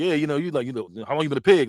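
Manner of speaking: put-on aggressive way of talking. Retelling a movie scene with an instigator in someone's face: imitating aggressive talk. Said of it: "everything he's saying is real, real aggressive".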